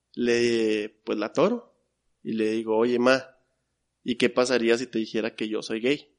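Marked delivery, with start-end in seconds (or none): none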